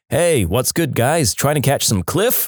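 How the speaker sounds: ordinary talk, nothing marked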